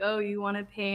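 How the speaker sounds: ordinary talk, nothing marked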